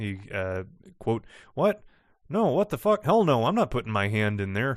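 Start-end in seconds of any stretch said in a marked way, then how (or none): 1.5-4.8 crude, rude, blunt tone with swooping pitch. Reading aloud a test subject's refusal from a log: rude refusal. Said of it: "quite rude about it".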